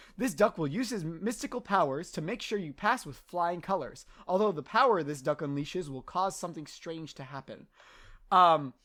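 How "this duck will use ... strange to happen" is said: ordinary delivery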